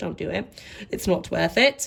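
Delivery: terrible put-on British accent. Advising against restricting yourself too much: terrible british accent. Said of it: "Sorry for my terrible British accent".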